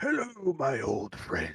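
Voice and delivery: raspy character voice. Narrating a scene to the players, voicing the Lich King: raspy Lich King voice. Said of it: "His voice is raspy".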